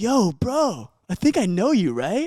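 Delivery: slow, high, drawn-out. Retelling what a guy said on meeting: imitating the guy's tone. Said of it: "In the same act-, tone, too".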